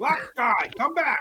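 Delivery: yelled orcish monster voice. Calling after a character who ran off after the guards, yelling in Orcish. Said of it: "I'm gonna yell at him in Orcish".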